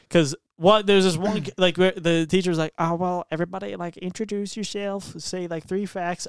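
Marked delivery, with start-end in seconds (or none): 2.7-6.2 soft put-on country accent. Retelling what a teacher said to the class: country accent. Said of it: "I don't know why I'm talking a country accent".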